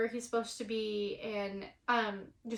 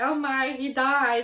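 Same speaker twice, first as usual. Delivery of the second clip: loud, very slow, drawn-out, freaking-out panicked crying; 3 semitones higher, 8 dB louder than usual. Speaker retelling fearing a man who didn't answer had died, acting out panicked crying. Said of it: "I'm crying. I'm freaking out".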